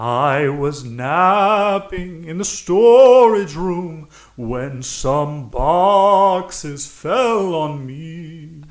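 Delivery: ghoulish voice, me drawn out. Asked how they died, a character answers in a ghoulish voice. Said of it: "do you really talk like a a ghoul?".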